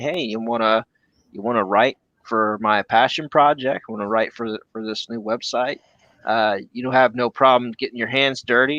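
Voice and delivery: ordinary talk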